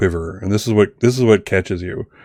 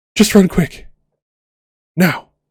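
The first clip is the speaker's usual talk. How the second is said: very high, trembling, quivering delivery; 11 semitones higher than usual. Narrating a scene, voicing a woman whose voice quivers. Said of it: "you hear this quiver in her voice".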